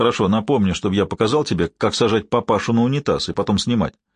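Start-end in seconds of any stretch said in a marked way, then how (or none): none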